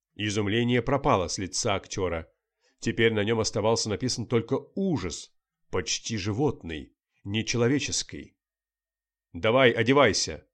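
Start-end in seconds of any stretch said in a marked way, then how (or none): 9.3-10.3 authoritative, commanding voice. A journalist addresses a frightened actor as police are coming, commanding. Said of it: "скомандовал журналист".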